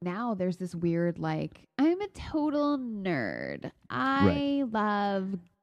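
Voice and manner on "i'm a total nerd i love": very slow, put-on girly drawl, high and sing-song. Acting out a self-description as a total nerd, in a put-on hot girl voice. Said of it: "you're using your hot girl voice".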